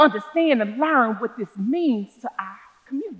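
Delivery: ordinary delivery, nothing marked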